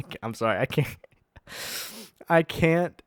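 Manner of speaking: talking through laughter. Trying to read a news item aloud, laughing while talking. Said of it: "I cannot read this without laughing".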